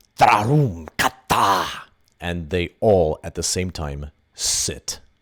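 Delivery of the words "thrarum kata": very sharp, curt, raised voice. The matriarch stands a little straighter and commands the beasts, in a very sharp tone. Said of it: "in a very sharp tone".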